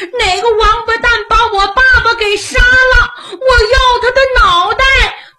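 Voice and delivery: high, loud, wailing cry with shouting.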